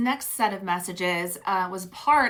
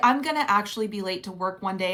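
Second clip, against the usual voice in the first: ordinary talk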